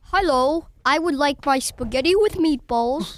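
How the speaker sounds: loud, put-on British accent. Taking a turn ordering food, speaking in a British accent. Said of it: "A famous British dish".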